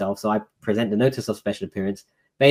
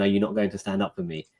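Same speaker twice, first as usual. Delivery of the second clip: put-on angry, frustrated judge voice; 6 semitones higher than usual. Retelling the judge's first words to the speaker in court: retelling an angry judge. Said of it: "the judge looking at me angrily".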